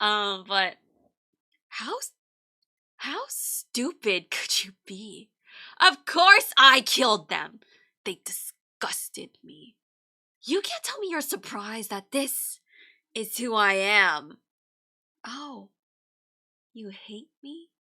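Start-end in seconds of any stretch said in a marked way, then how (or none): 1.7-17.7 very loud, wild, unhinged, scornful ranting. Showing how they'd read an insane character's lines: unhinged, contemptuous character read. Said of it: "this is just how I would do an insane, insane character, but I would read it like this".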